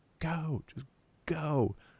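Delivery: play-acted, shrill, very high screaming yell. Retelling screaming at cars stopped in the road: imitating own screaming. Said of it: "screaming at them".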